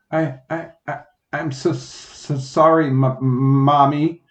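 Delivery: stammering. Reading a child narrator's apology to their mommy, stammering. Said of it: "so I stammered".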